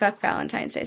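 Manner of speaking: soft, unvoiced, muttered delivery.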